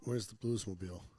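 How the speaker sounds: ordinary talk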